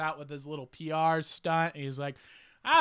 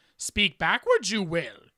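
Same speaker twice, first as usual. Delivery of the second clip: put-on little creature voice with inverted word order; 3 semitones higher than usual. Mocking backwards speech about a green Muppet: Yoda voice. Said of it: "You have to have that accent".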